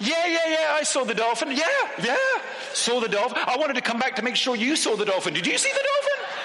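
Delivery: mocking, very high-pitched squealing squeak.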